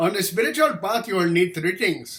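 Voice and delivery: put-on Indian accent, put on. Quoting a man's advice about the spiritual path, the speaker uses a put-on Indian accent. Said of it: "an Indian accent".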